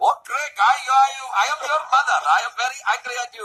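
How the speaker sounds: fake Pakistani-sounding accent. Retelling his mother's words to him, in an accent that sounded Pakistani. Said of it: "It sounded Pakistani to me".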